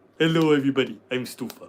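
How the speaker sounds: poor cartoon cat voice. Describing a British comedian's blue cat character, doing the worst Stufa impression. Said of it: "the worst Stufa impression in the world".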